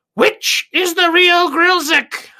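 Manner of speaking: very high voice, like three voices in unison. Narrating three Grilziks who look at you: three Grilzik voices in unison. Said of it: "in three distinctly Grilzik voices".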